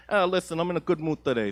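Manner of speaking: put-on Italian American accent. Retelling how they answered someone, in an Italian American accent. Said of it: "I responded with an Italian American accent".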